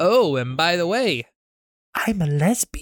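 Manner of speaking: put-on slow elderly lady character voice. In a narrated sketch, voicing the elderly lady the young man helped: elderly lady character voice. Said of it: "he sees an elderly lady drop something and it breaks. / he sees an elderly lady drop something and it breaks. ... Shut up, / he sees an elderly lady drop something and it breaks. / he sees an elderly".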